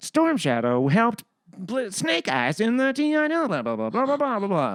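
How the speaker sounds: high-pitched computer voice-assistant style voice. Speaker recounting asking who a character is, Google voice impression. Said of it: "This is my impression of the Google voice".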